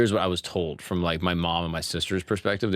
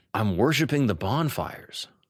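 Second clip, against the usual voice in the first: mock angry, slow, drawn-out delivery; 3 semitones higher than usual. Retelling what was said angrily while sleepwalking: imitating own angry reply. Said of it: "like, angry, like, pissed".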